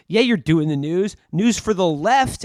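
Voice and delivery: angry, pointed, mad, accusing tone. Retelling a scene where a woman gets mad at a man, acting out getting mad. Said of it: "gets mad with him and she goes".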